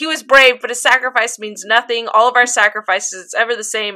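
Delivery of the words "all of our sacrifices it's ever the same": ordinary talk, nothing marked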